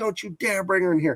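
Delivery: put-on angry scolding voice. Retelling a movie scene, the mother berating her son: imitating a mother scolding angrily. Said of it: "the mom chews Norman's ass".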